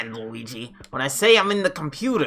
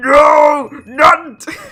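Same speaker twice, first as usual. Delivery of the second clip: very high, very loud wail with "no" drawn out long; 11 semitones higher, 10 dB louder than usual. Showing which game line the cry resembled: imitating Ganon's No cry. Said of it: "the Ganon one where it's like".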